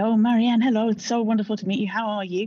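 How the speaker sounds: put-on flustered, jittery, fast, nervous voice. Retelling a terrifying first meeting, acting out the speaker's own nervous greeting. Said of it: "I said nervously".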